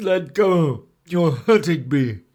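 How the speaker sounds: loud, pushed through the nose. Narrator reading the Elephant's Child's reply to the crocodile, nasal Elephant's Child voice. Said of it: "an elephant's child, who was full of satiable courteosity, and that means he asked ever so many questions. / But there was one elephant, a new elephant, an elephant's child, who was full of satiable c".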